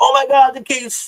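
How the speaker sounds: high, loud, mock-enthusiastic gush.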